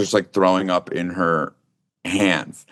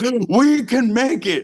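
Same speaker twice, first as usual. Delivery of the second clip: put-on scream, very high-pitched and very slow. Telling about a car ride, the speaker quotes their dad, imitating dad screaming. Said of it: "my dad is screaming like".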